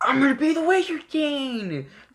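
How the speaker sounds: put-on very high, scratchy childish voice, King stretched. Imitating Asta, a character they find annoying, in Asta's scratchy, childish voice. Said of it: "his like scratchy, childish voice".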